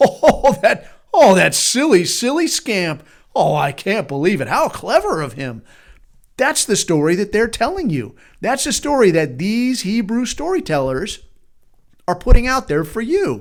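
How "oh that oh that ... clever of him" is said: slow, doting, charmed, fondly amused admiration. Retelling the chief inspector's reaction in the film: imitating amused, admiring reaction. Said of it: "is he angry in the film? No".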